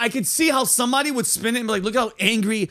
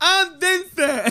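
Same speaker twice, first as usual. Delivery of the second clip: deaf speech pattern, pitched up; 7 semitones higher than usual. Retelling introducing himself to a deaf neighbor: imitating deaf speech. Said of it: "you automatically start talking like them".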